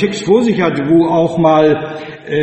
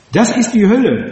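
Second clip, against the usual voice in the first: usual speaking voice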